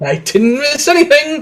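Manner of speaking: agitated, worked-up voice pitched very high. A character answers a teasing remark, agitated. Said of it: "Prater, calm down".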